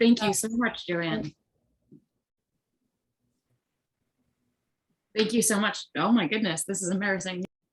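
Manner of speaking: speaking while crying. Thanking a reader after her reading, crying while talking. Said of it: "I'm crying".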